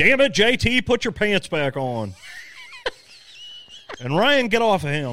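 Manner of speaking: bossy gym teacher voice. Imagining what his wife would say if she walked in, gym teacher voice. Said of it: "I just gave my wife a fucking gym teacher voice".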